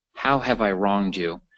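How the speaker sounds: normal talking voice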